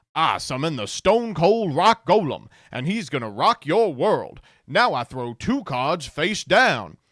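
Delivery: puppet-like character voice. Imitate a guy in the Four Kids dub, in a Muppet from the Southwest voice. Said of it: "sounds like a Muppet from the Southwest".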